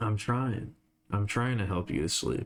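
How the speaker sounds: soothing, calming voice. Talking to listeners to help them fall asleep: soothing voice. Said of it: "Soothing voice".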